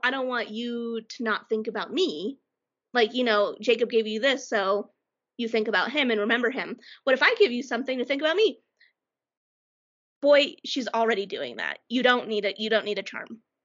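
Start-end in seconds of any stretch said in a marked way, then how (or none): none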